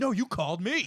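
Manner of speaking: mock angry, heated retort. Retelling how two kids argued on a prank call: imitating a heated argument. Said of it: "a huge heated argument".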